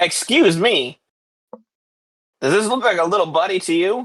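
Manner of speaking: small, high-pitched little gnome character voice. Voicing a little gnome who kicks a player's shin: little gnome voice. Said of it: "This little gnome walks up to you".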